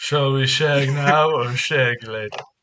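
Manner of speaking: bad, unconvincing put-on British spy impression. Repeating the line while friends judge the accent, a bad Austin Powers impression. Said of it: "You sound like Austin Powers".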